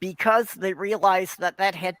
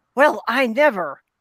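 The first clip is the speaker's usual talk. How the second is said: put-on loud, scandalized, gasping old-lady voice; 4 semitones higher, 6 dB louder than usual. Retelling a movie scene, quoting an old lady on the sidewalk, imitating a gasping old lady. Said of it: "this old biddy on the sidewalk just gasps".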